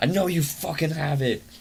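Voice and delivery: eerie, creepy monster voice, high and called out. Recounting a werewolf attack, retelling a creepy voice yelling. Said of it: "this creepy ass voice yelling".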